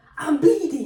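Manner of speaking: loud shouted call-out.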